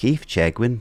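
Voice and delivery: put-on voice with a hint of Irish accent. Saying a name the way Sky Fox would say it: imitating Sky Fox. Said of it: "Is that a good impression of Sky Fox saying it?".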